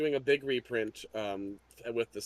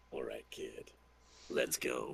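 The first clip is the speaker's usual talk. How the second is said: whispered, hushed, breathy put-on character voice; 13 semitones lower, 8 dB quieter than usual. A player, told to keep doing the voice, continues in put-on character voice. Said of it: "I like the voice".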